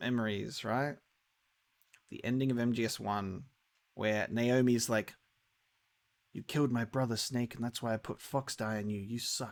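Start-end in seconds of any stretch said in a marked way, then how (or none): 6.3-9.5 put-on British accent, spoken more quietly. Speaker recalling the ending of Metal Gear Solid one, Naomi British accent. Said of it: "And also I have a British accent".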